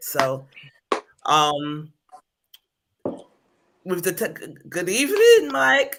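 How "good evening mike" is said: high, loud cracking voice. Greeting Mike mid-conversation, the speaker's voice breaks: voice cracking. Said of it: "Why did my voice crack like that?".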